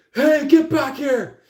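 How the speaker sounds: very high, loud shouted yell. Acting out someone scratch clawing after another: imitating someone yelling. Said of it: "yelling, going like".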